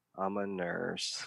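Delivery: small, real quiet, little voice. Retelling a crowd member's reply to a comedian: imitating someone speaking quietly. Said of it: "real quiet".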